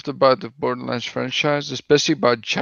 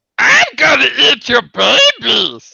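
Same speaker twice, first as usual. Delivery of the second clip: loud, crazed, rasping shriek with drawn-out "babies"; 10 semitones higher, 7 dB louder than usual. Gamer, urged on by a friend, does a Borderlands bandit impression. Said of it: "make an impersonation of the of Bandit from Borderlands".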